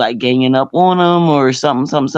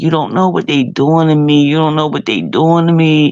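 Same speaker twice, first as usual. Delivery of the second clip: play-acted, overwrought, very emotional, almost crying; 2 semitones higher than usual. Retelling a late-night phone call where the caller pleaded: imitating someone emotional. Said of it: "he was very emotional".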